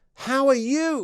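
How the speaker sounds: very high, crisply and clearly enunciated tones. Recalling how people back home greeted each other, in very clear enunciated tones. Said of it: "In a very sort of clear tones".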